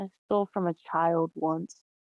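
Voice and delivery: mumbled, sounding ashamed. Narrator voicing a character admitting something she's ashamed of, muttered under breath. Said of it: "She's gonna just like mutter under her breath".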